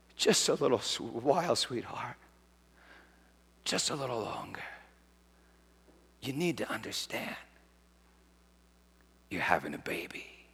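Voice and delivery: hushed, breathy, very quiet whisper. Voicing Jesus whispering to his bride in tribulation: retelling a whisper. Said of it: "he whispers to his bride".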